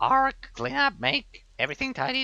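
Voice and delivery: very high, badly done, cheap goblin caricature voice. During a quest, voicing a goblin in a bad goblin imitation. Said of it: "my shitty imitation of a goblin".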